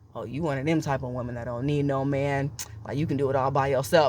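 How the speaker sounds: put-on, talking-down, patronizing, condescending tone. Spelling out the undertone of a man's remark: imitating a condescending undertone. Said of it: "the undertone of his voice was like".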